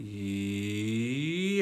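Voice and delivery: E sliding low to high, held, rising second tone. Teaching the chinese second tone on a syllable: rising pitch, held long. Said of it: "go from a lower pitch to a higher pitch".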